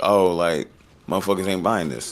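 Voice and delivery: ordinary talk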